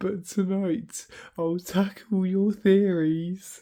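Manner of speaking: laughing while talking. Reading a poem aloud to chat, laughing while talking. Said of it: "I'm sorry for laughing".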